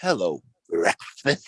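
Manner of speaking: classic cartoon cat voice. Joking about zoo animals seeing people as food: Sylvester the cat voice. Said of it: "It'd be like Sylvester".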